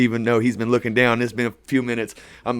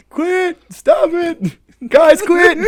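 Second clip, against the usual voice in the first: mock shrill, very high, very slow stretched-out scream; 6 dB louder than usual. Retelling a bathroom fight, imitating a friend screaming: imitating someone screaming. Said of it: "Ty screaming".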